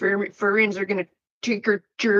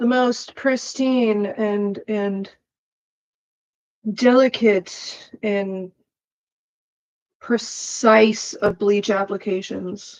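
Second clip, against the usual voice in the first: slow, mock-precise, sarcastic drawl. Applying bleach to hair: sarcastic. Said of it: "I'm being sarcastic".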